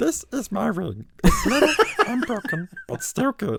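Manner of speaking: very high creature voice swooping all over. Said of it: "It's kinda giving Gollum".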